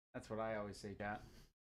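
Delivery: ordinary talk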